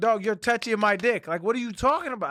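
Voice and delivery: acted, high, outraged, angry tone. Retelling a quarrel with an airport security officer: retelling own angry words. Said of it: "I was mad as fuck".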